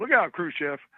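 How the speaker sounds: loud, high-pitched, joking yell. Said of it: "jokingly yells out".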